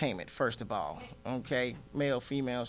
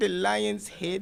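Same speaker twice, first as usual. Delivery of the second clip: slow, drawn-out, high mock Nigerian accent. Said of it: "I love making fun of my parents".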